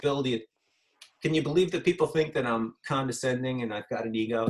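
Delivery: normal talking voice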